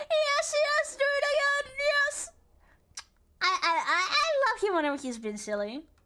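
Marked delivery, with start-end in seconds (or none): 0.0-2.3 mock excited, gleeful narrator voice. Imitating the game narrator shaking his hands: imitating the excited game narrator. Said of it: "shaking his hands and".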